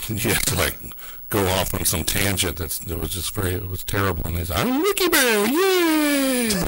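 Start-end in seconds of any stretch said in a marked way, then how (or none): 4.6-6.5 put-on happy little voice, much higher. Speaker describing how a bear character talked, imitating Wiki Bear's happy voice. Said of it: "He was in his, like, happy little voice".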